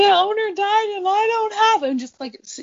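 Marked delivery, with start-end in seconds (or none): 0.0-1.8 play-acted sobbing, pitched very high. Retelling how mom answered the checkpoint officers: imitating mom sobbing. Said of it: "starts s-, sobbing, and she's like".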